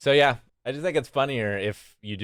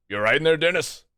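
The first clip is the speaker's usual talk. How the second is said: hefty, burly bruiser voice, pitched up; 6 semitones higher, 3 dB louder than usual. Narrating a scene, voicing someone behind a door calling to Dennis: big burly voice. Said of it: "you hear a big burly voice of like".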